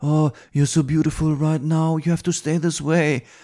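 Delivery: English spoken with a put-on French accent. Retelling an interview quote from a director: imitating a french accent. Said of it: "macht da einen französischen Akzent nach".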